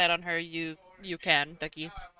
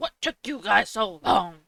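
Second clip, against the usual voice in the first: sharp, barked, demanding delivery; 3 semitones higher, 4 dB louder than usual. Narrator voices Grimshaw as he sees the players arrive; Grimshaw barking voice. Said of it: "Grimshaw starts to bark and he says".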